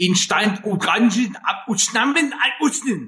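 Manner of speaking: fake German, loud and high.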